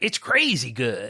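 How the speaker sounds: cowboy-style commercial announcer voice. Imitating the announcer voice from a Pop-Tart ad: imitating an ad voice like a cowboy. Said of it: "You sounded like a cowboy".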